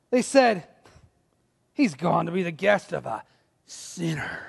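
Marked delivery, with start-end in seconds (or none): 1.7-4.4 grumbling, scornful mutter with open contempt. Reading the crowd's grumbled words about a guest: imitating disdainful muttering. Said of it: "do you hear the disdain in their voice?".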